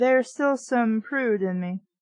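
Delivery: ordinary delivery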